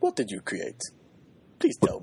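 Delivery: put-on, sing-song Japanese accent. Reading out a fan question from Twitter, the speaker uses a Japanese voice. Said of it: "do you like my Japanese voice there?".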